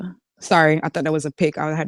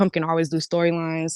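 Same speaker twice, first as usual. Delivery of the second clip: ordinary talk, nothing marked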